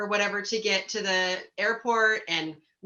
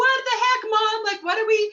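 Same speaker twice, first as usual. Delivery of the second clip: put-on upset teenager's very high, loud yell; 13 semitones higher, 5 dB louder than usual. Retelling a trip gone wrong, imitating a teenager yelling. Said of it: "I got my teenager yelling at me".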